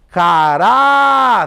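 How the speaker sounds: caráter with the rá stressed and held long. Calling caráter like a name at a gate, stress and draw out 'rá'. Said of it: "a penúltima sílaba foi a sílaba que durou mais".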